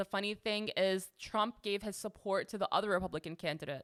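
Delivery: ordinary delivery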